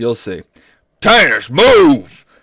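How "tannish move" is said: loud, high-pitched shout, yelled. Reading a story aloud, a father shouts at tannish from behind her, shouting. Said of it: "She heard her father shout".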